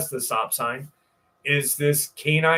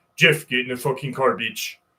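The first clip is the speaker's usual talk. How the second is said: put-on Czechoslovakian accent; 3 semitones lower than usual. Retelling a friend shouting to get in the car: imitating a Czechoslovakian accent. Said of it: "in his beautiful Czechoslovakian accent".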